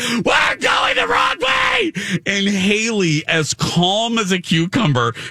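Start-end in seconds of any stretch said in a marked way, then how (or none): 0.0-1.9 put-on shrill, very high scream at the top of lungs. Retelling a story, the speaker quotes Jen, imitating Jen screaming. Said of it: "Jen starts screaming at the top of her lungs".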